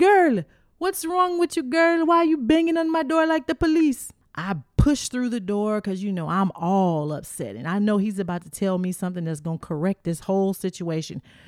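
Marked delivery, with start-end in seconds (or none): 0.0-4.1 put-on Virgin Islands accent, very high-pitched. Retelling a man answering his door to the speaker, Virgin Islands accent. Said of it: "in his Virgin Island accent".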